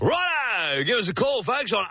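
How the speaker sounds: swelling radio-host crescendo, rising volume. A radio host builds up to a commercial break, crescendo. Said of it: "when I crescendo my voice like that".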